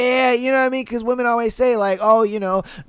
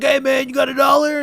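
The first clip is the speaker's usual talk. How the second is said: put-on strung-out pleading voice, higher; 3 semitones higher than usual. Acting out a crackhead asking someone for a dollar: imitating a crackhead begging. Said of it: "He was just like".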